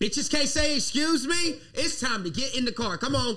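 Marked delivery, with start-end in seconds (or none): 0.0-1.6 mock loud drunk talk, higher and louder. Retelling what drunk women said after a show: imitating drunk women talking loud.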